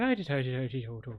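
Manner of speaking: put-on stage-Irish leprechaun voice with Irish accent. Imitating how a teammate's game character sounds: imitating a leprechaun voice. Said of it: "He sounds like a leprechaun".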